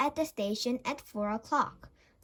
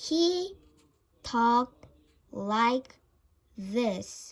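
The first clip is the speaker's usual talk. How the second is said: extraordinarily slow talking, every word stretched out. Reading a story aloud, showing how a character talks: extraordinarily slow speech. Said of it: "talked in an extraordinarily slow way".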